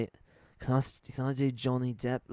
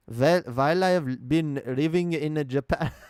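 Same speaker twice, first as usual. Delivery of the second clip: put-on German accent on English words; 3 semitones higher, 5 dB louder than usual. Attempting an accent on request: german accent speaking english. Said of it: "Do an accent of a German man who's been living in Japan".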